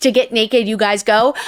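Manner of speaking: put-on bombastic, presumptuous delivery. Retelling how a character announces something: imitating a bombastically presumptive line. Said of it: "bombastically presumptive".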